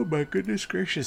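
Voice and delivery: words stretched through a yawn. Pausing the game and apologizing, yawning while talking. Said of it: "I'm just yawning all over the place".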